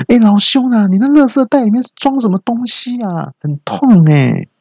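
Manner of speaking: put-on very high, shrill, pained shout. Retelling what they yelled up at a neighbor, retelling a shout. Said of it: "我就大叫说".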